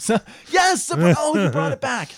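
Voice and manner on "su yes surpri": loud overexcited burst, words breaking off. Echoing the other speaker's word surprise: too excited. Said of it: "Got a little too excited about that".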